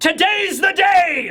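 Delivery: mock loud, high megaphone-style announcing voice. Retelling how a pirate captain addresses a rival crew: imitating a megaphone announcement. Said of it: "he pulls out a megaphone, and he announces".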